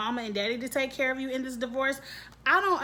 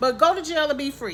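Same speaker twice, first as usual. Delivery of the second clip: louder, raised voice. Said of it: "I'm gonna talk louder".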